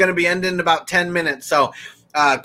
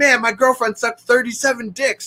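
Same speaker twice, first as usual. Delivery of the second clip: play-acted high, pissed-off, disbelieving, indignant rant; 6 semitones higher than usual. Retelling a favorite movie scene, imitating Dante getting pissed. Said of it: "And gets all pissed".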